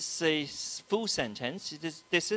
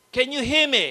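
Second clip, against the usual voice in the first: very loud, projected voice; 8 semitones higher, 11 dB louder than usual. Addressing those in the back, in a loud projected voice. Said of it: "I must have to project my voice".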